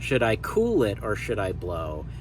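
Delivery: heavy emphasis placed on the word "cool". Quoting a line the way we speak: stress on 'cool'. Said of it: "I want to put the the stress on the word cool".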